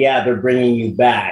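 usual speaking voice

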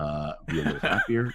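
low, soft, blunt, offhand delivery. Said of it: "J J walks up and goes".

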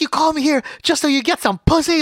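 acted-out, very high-pitched, shrill yelling. Speaker retells a woman yelling at a friend trying to walk away, retelling a woman yelling. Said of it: "she was like yelling at him, like".

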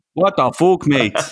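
put-on Irish accent, slightly better. Trying again after the first attempt was called terrible, slightly better Conor McGregor impression. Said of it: "that got slightly better".

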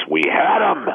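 acted-out, high, desperate, anguished outcry. Retell how a man slammed you against the tunnel wall after the game, imitating a desperate scream. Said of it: "in a desperate voice".

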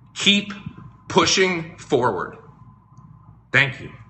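choked-up voice, catching with emotion. Thanking supporters for their support at the end of a message: getting emotional. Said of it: "You guys are getting me emotional".

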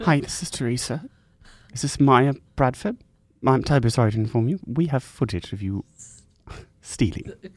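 put-on British accent. Playing a caller named Teresa on a pretend phone call, put-on British accent. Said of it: "I'm a bit British".

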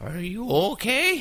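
put-on very high-pitched old woman voice. Retelling what the woman rubbing the speaker asked, in an old woman voice. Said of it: "that's my old woman voice".

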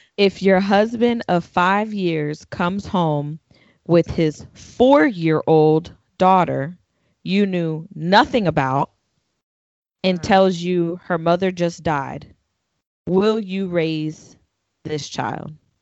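slow, deliberate reading. Reading a question aloud to the group, reading slowly. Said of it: "I'm gonna read it slow so everyone can process".

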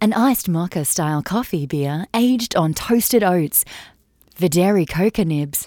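deep radio commercial announcer voice. Reading out a beer's description to the others, in an advertising voice. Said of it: "let me put my advertising voice on".

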